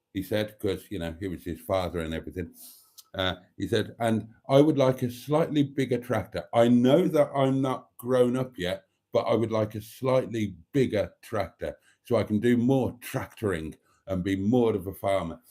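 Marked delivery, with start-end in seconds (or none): none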